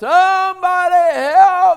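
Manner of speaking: very shrill, very high, very loud cry. Acting out a possessed man calling from the mountains: imitating a man crying for help. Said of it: "Maybe he's crying for help".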